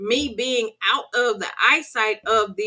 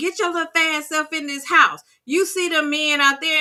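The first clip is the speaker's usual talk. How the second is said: bossy, hollering put-on old woman voice; 6 semitones higher than usual. Retelling a grandmother hollering out the window: imitating grandmother hollering. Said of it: "she hollered out the window".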